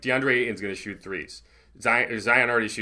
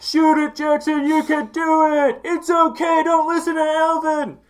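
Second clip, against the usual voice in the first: higher, louder shouting; 8 dB louder than usual. Retelling how fans at the game yelled at a player: imitating yelling fans. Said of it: "were just yelling".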